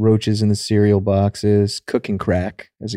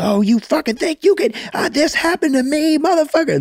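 very high, pitched-up voice. Retelling what mom said after a comment about staying up: imitating mom's voice. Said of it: "There's that voice".

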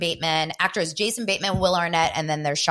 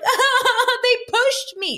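tearful sobbing, pitched very high; 5 dB louder than usual. Retelling a reality show scene, quoting a crying cast member: imitating Sheena crying. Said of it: "And she was crying".

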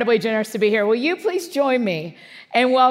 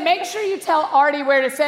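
usual speaking voice

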